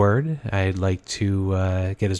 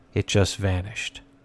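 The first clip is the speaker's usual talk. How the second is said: plain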